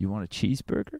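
soft, quiet whisper. Retelling a scene where one character parrots another: imitating Zaccoli's quiet whisper. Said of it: "parroting and whispering the line back to her".

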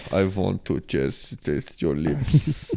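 soft, hushed put-on vampire voice. Trying out a line for a dating app, the speaker does a vampire voice. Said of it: "Imagine I'm saying this like a vampire".

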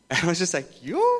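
ordinary talk, nothing marked

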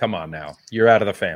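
imitated doom-laden tone. Retelling how another speaker's question sounded: imitating a doom-laden tone. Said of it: "but the way she toned it was".

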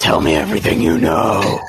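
low, menacing, threatening voice. Interrogating a sleeping person with light in their face: menacing interrogation. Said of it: "put it right up to their face and say".

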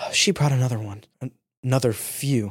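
soft, hushed half-whisper under the breath. Narrating a scene to a player, the elf girl half-whispers. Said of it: "the elf girl whispers".

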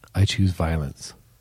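put-on deadpan delivery. Retelling a scene where a character speaks to the camera, retelling a deadpan line. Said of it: "she's looking deadpan at the camera, like no emotion in her face at all".

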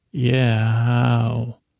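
put-on dreamy voice. Retelling a scene, the speaker quotes Walt's reply in a dreamy voice. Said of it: "he says in this real dreamy voice".

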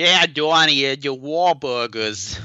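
put-on Boston accent. Mocking an actor's part in the movie: imitating Eli Roth's phony Boston accent. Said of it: "really hitting that phony Boston accent".

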